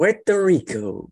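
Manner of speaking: very high-pitched, big, self-important delivery. Saying a place name the way Donald Trump did: Donald Trump impression. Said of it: "I'm trying to do it like John, uh, Donald Trump did it".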